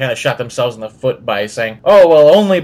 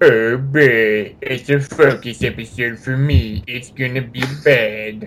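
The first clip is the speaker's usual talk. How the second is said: mock droopy cartoon hound voice, "boy" drawn out; 4 dB quieter than usual. Imagining how a certain person would talk, in a Droopy Dog impression. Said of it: "I really wish I could do a droopy dog impression".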